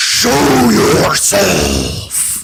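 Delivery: deepest, loud, guttural, disgusting orc voice. The speaker describes calling out to anyone who can hear, in a deep guttural orc voice. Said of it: "deepest, guttural, disgusting orc tone".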